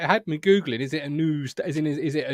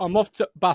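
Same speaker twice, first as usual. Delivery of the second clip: Bath said with a northern English accent; 3 semitones higher than usual. Comparing how the town name bath is pronounced, northern english accent. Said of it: "is how you would say it if you were from the northern part of of England".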